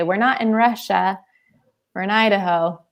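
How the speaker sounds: normal talking voice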